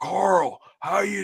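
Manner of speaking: put-on gravelly American accent. Imitating a British actor's American accent as Rick: gravel voice. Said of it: "the gravel voice".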